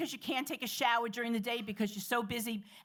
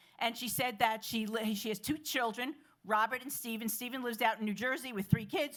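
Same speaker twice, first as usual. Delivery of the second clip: ordinary talk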